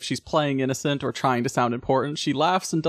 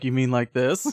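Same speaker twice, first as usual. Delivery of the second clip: drops into a husky, sexy voice. Retelling a movie scene where Toko answers: husky sexy voice as Toko. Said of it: "drops into her, like, husky, sexy voice".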